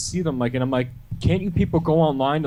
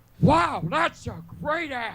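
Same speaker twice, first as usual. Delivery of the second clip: very high-pitched voice; 12 semitones higher than usual. A guest asked by the hosts for an impression, doing the requested scene impression. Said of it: "Do the scene where he says "great ass,"".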